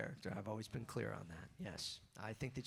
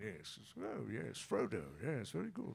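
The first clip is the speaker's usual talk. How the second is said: sing-song voice, pitch swooping up and down; 3 semitones higher than usual. Showing the voice used for Plo Koon: Ian McKellen voice. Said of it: "when I do Plo Koon, it's right here. It's Ian McKellen".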